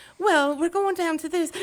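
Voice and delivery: put-on English accent. Retelling answering people in London while picking up their accent: imitating own English accent. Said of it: "obviously with the English accent".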